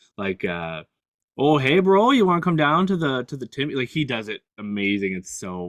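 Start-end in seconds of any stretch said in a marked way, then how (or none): 1.4-3.7 high, loud, heavily exaggerated Canadian accent. Describing a podcast host who gets into his accent: Will Arnett Canadian accent. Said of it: "sometimes he can really get into the, into the accent".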